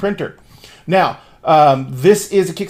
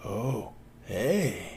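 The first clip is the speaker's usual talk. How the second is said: low, soft, offhand tone. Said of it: "and he says".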